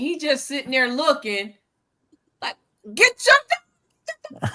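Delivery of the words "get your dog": put-on scream, pitched higher. Retelling being approached by a dog: imitating her own screaming. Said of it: "I'm screaming and hollering".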